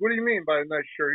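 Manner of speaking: plain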